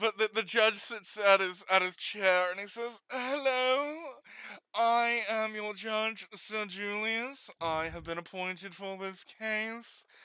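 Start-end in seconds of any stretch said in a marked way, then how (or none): 3.1-10.0 slow, stuffy, put-on British accent. Voicing a judge opening a case: British accent. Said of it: "I don't know why I'm making him British".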